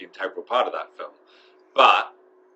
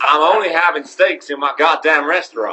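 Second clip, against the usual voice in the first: put-on American Southern Texas accent; 8 semitones higher, 9 dB louder than usual. Recounting a day spent as a restaurant manager, in a put-on shanty Texas accent. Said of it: "My American accent just kind of goes a bit shanty Texas".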